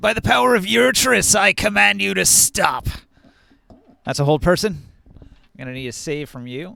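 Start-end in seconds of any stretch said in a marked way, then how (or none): 0.0-2.9 loud, high, contemptuous sneering voice. Game master voices a character who points at Razor and commands; sneering. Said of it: "he sneers".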